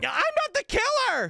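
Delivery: mocking yelling on one note. Mocking a voice actor's one-note yell while framed for murder: imitating Mindy yelling flatly. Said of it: "she's yelling and she's being like".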